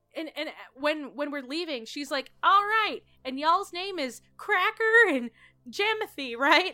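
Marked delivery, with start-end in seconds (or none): 2.4-6.7 full-on hollering, high-pitched screaming woman voice. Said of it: "she's screaming the whole time".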